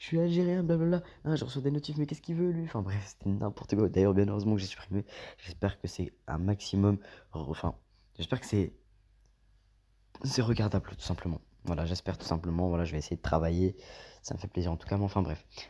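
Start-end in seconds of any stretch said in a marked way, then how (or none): 0.0-2.6 much higher, put-on high-pitched voice. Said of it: "avec ma voix aiguë".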